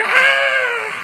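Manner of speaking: excited, very high, loud shriek.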